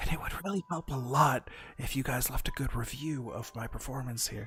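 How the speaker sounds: quiet, hushed voice. A narrator reads a character who lowers his voice mid-sentence to a hushed voice. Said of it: "lowers his voice to a hush".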